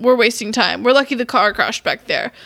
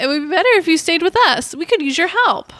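acted woman character voice, pitched up; 6 semitones higher than usual. Speaker switching into a woman character's voice during a scene. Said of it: "change this woman voice".

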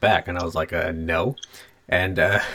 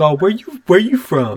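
put-on mock-cool, smooth voice; 11 semitones higher, 7 dB louder than usual. Imitating how he talks to girls to sound cool: mock-cool smooth voice. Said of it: "that voice he does when he's like trying to talk to girls and sound really cool".

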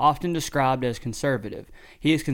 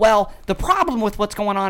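mock ranting man voice, higher and louder; 8 semitones higher, 6 dB louder than usual. Imitating a rant heard in a clip: imitating a ranting man. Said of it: "I can sound pretty close to him".

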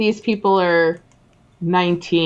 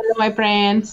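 put-on Hindi accent. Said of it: "with a Hindi accent".

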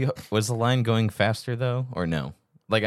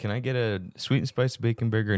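plain

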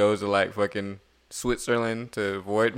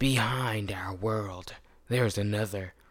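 movie trailer narrator announcer voice; 6 dB quieter than usual. Telling the plot line to listeners, in a movie trailer voice. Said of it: "let me get my movie trailer voice".

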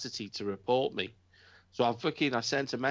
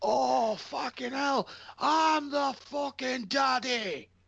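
put-on very high, drawn-out, excited Scottish accent; 13 semitones higher than usual. Talking about wrestling, the speaker imitates an excited Scotsman. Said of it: "a Scotsman getting excited about wrestling".

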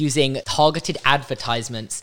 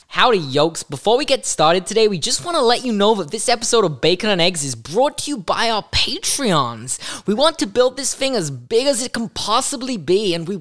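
goofy, silly, high put-on voice; 8 semitones higher than usual. Asked by a co-host to read the Patreon message, in a silly voice. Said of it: "You do it in like a silly voice".

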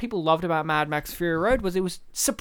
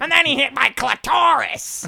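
loud, shrill, raspy, rough screech; 7 semitones higher, 5 dB louder than usual. Imitating a comedian reading Fifty Shades of Grey: Gilbert Gottfried impression. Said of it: "Have you heard him reading Fifty Shades of Grey".

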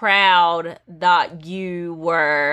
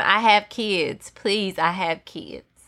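slow, imploring, repeated begging plea. Retelling what a man in a video said to the people shouting, imitating someone pleading. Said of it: "this man has to plead with him".

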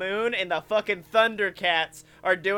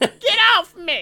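put-on complaining voice, higher and louder; 11 semitones higher, 7 dB louder than usual. Voicing the seat a rider sits in: put-on talking seat voice. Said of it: "the anthropomorphic version of the seat you're in".

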